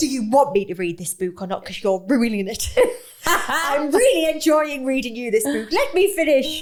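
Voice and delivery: put-on exasperated, annoyed tone, high and rising. Retelling telling off someone who kept interrupting their reading aloud, retelling annoyed scolding. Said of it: "getting really annoyed".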